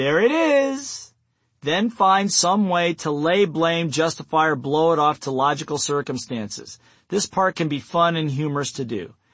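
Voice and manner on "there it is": high, slow, smiling, knowing tone floating up. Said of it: "smile again and say".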